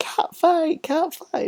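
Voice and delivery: very high-pitched, drawn-out, hollering shout. Imagining what Jerry Lawler would shout in the scene: imitating Jerry Lawler shouting.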